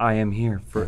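dead flat, expressionless monotone, no pitch lift. Quoting a line from her film role, Jessica Chastain monotone voice. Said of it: "in this monotone voice".

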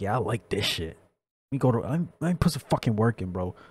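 put-on devious voice. Voicing the thoughts of a man in a clip who looks devious: put-on devious voice. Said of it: "this man looks so fucking devious".

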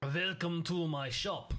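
clumsy, bad, fake put-on French accent. Finally arriving at Pierre's house, the speaker voices him greeting: bad French accent as Pierre. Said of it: "I don't know how to do a French accent".

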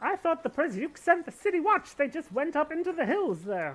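put-on elderly rural woman voice. A game master voices an old woman with cows answering the players, in an old woman voice. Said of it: "You see old woman outside with the cows".

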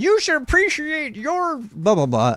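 put-on very high, sing-song, swooping old-man scolding voice. Pretending to be the old guy lecturing others: imitating an old guy lecturing. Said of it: "I'm the old guy telling".

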